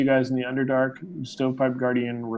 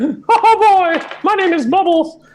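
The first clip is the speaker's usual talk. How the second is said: squeaky cartoon mouse voice, much higher and louder; 11 dB louder than usual. Someone answers the question of whose voice it was, in a Mickey Mouse voice. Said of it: "that's Mickey Mouse".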